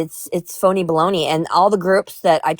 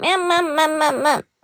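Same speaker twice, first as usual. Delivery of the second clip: put-on whiny bratty dog voice, much higher; 11 semitones higher than usual. Describing how the dog asks to be cuddled, imitating a whiny bratty dog. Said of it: "he says it like a whiny little brat".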